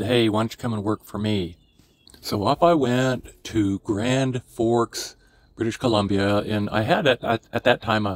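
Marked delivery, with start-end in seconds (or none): none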